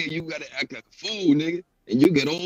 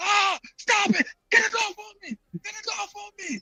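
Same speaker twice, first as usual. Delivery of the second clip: very high, shrill screeching yelps and screams. Speaker recounting a police dog biting a man, imitating the man screaming. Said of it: "This guy was screaming like a bitch".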